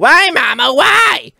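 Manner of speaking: put-on very high, loud, shrill demonic kid voice. A speaker acts out a child questioning a parent: demon-sounding child voice. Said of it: "That sounded like a demon".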